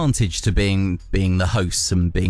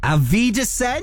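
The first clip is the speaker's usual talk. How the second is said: put-on German accent, very high-pitched. Signing off to Kath Brazier, in best German accent. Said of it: "in my best accent".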